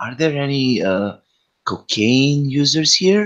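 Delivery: speaking quietly. Leaning closer in character to ask the others something: lowered voice. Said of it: "I get closer and lower my voice".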